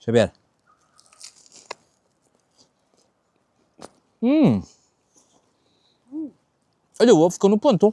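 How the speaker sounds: talking through chewing with mouth full. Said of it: "Não se fala de boca cheia".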